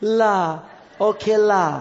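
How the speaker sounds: put-on Singaporean accent. Retelling the Lord's reply to Moses, in a Singaporean accent. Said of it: "I speak like a Singaporean".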